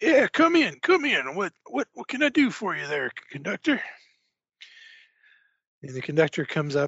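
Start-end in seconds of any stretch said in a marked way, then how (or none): 0.0-3.8 put-on rough older man voice, higher and louder. Marshal Nash invites the train conductor into his car, Marshal Nash voice. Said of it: "So [name] himself, he's an older gentleman, big barrel-chested guy, kind of rough, very quick to anger".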